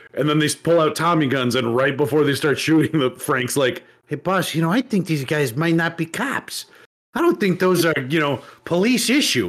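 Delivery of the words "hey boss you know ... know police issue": put-on Chicago Italian mobster accent. In a told story, Frank speaks to the boss as gunmen arrive: Chicago Italian mob accent. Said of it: "a Chicago Italian mob accent".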